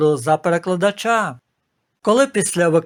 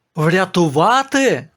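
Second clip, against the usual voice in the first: surprised, astonished outcry. Narrator reads a character's surprised exclamation in a story. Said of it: "здивовано вигукнув Андропов".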